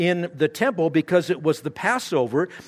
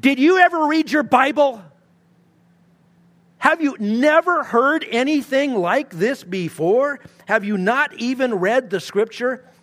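put-on cutting, insulting sarcasm, pitched up; 8 semitones higher, 4 dB louder than usual. Picturing him facing the leader of the scribes: imitating Jesus being sarcastic. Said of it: "That is sarcastic, pointed, insulting, and personal".

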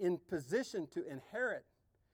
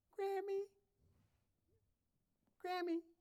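put-on very high, tiny, squeaky little-boy voice; 13 semitones higher, 4 dB quieter than usual. Retelling a little boy calling for his grandma at night, in a tiny squeaky voice. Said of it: "this tiny little voice in a squeaky tone".

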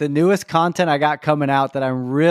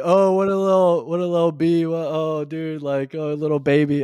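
put-on mocking, taunting voice. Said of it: "talked so much crap about my".

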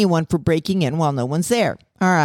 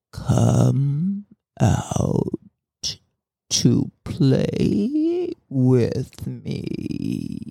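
low, crackly, unearthly, inhuman monster voice; 4 semitones lower than usual. Narrator voicing the unseen knocker outside the door, crackling, inhuman voice. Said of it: "in a crackling, inhuman voice going".

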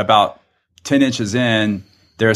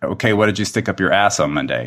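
whispered; 2 semitones lower than usual. Retelling asking a sedated patient a question: retelling own whisper. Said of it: "I whispered down in, into his ear".

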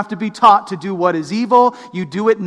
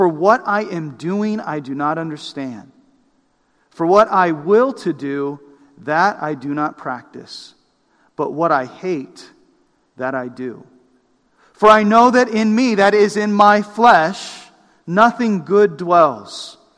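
clear, deliberate, slow reading with careful articulation; 3 semitones lower than usual. Speaker reading a Bible passage aloud to listeners: reading slowly and clearly. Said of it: "read it slowly".

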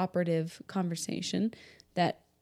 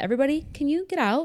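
put-on sassy tone, higher and louder; 8 semitones higher, 5 dB louder than usual. Retelling how the doctor cleared the room: imitating a sassy order. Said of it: "kinda sassy".

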